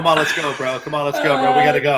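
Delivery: plain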